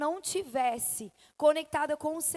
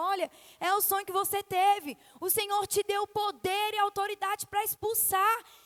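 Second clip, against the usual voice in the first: high shout carrying from across a room; 5 semitones higher than usual. Retelling what a pastor shouted from the other side, retelling a pastor's shout. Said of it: "a pastora gritou do outro lado".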